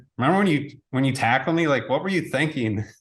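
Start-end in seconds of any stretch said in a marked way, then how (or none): none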